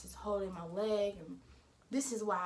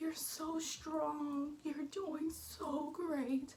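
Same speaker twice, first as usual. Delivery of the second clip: put-on crying voice, high and drawn-out, through tears; 7 semitones higher, 3 dB quieter than usual. Retelling what a nurse said while crying during the birth: imitating a crying nurse. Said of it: "She's over here crying, literally crying".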